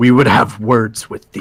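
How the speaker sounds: very menacing, threatening, ominous tone. Vimeris casts Shillelagh and answers the man who caught the three: very menacing. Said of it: "says very menacingly".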